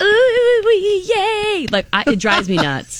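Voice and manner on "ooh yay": mock, very high, squealing, toddler-like cheer. Mocking grown men jumping up and down at sports: imitating excited toddler-like cheering. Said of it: "like a toddler, when they're like".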